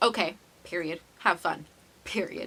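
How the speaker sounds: ordinary delivery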